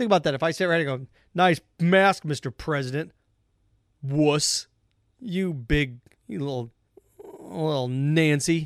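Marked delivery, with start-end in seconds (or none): 1.3-8.7 very slow, drawn-out, sneering, mocking tone. Acting out mocking the president for wearing a mask: imitating a mocking taunt. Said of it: "That's what you sounded like the last month".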